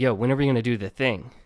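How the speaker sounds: whispered. Retelling asking a friend, kept secret from his dad: retelling a whisper. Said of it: "So I whisper over to him".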